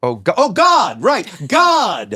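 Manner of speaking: loud, high-pitched, excited belted yell.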